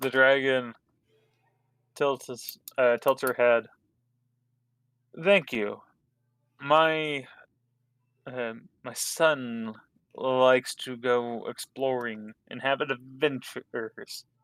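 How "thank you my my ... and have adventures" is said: adventures stressed as if in air quotes. Voicing a dragon mother thanking the party, audible air quotes on adventures. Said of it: "You can hear the air quotes as she says adventures".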